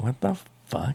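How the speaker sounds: soft, croaky, baffled, confused voice.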